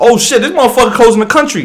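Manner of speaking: put-on alarmed, high, rattled-off panicked outburst. Acting out an american hearing about the travel ban: acting out a panicked reaction. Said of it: "Now I'm panicking".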